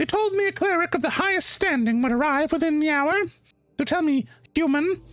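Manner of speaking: shrill, smirking, threatening goblin voice. Like a tiny, dangerous creature toying with a nervous guest, her shrill voice turning sweet and menacing as she demands an answer. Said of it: "her shrill voice echoes out through the chamber".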